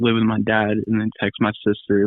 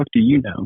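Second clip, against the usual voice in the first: scornful, revolted, disgusted, pitched up; 5 semitones higher than usual. Retelling own past reply to people judging the drinking: imitating own disgusted retort. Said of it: "look at them the most disgusted face".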